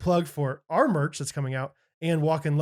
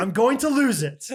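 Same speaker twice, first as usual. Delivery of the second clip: put-on frustrated voice, higher and louder; 7 semitones higher, 5 dB louder than usual. Retelling his wife calling overwhelmed by crying kids: imitating frustration. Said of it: "She's like".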